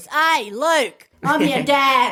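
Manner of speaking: thick, very Australian accent, spoken very slowly. Joking about how else the famous villain line could sound: very Australian voice. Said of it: "Or a very Australian voice".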